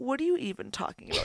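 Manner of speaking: incredulous, breathy, half-whispered doubt. Retelling how she answered when everyone said her jeans fit, mock-doubtful. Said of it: "She's like doubting them".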